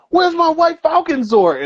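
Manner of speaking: put-on very high, loud, shrieking yell. Retelling how a classmate demanded his toy back: imitating a kid yelling loudly. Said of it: "yelled at the top of his lungs".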